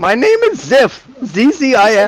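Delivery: put-on fantasy gnome-goblin character voice. Playing a gnome who gives a name and is asked about being a goblin, in a put-on gnome voice. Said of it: "it's my gnome voice".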